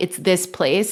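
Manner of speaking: ordinary delivery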